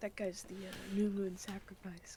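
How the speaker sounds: whispered line. Telling the others in character which guy is the sacrifice: whispering. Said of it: "I whisper".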